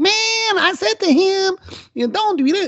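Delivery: very high-pitched, slow, squeaky voice. Imitating Aziz Ansari's way of talking: Aziz Ansari squeaky voice. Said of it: "He's got that kind of squeaky voice, like".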